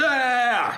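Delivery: furious, high, loud beast roar.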